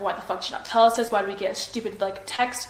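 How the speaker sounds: acted furious outburst. Retelling what she said to the policeman: imitating a furious outburst. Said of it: "she was pissed off".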